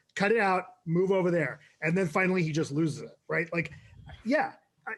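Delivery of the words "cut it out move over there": ordinary talk, nothing marked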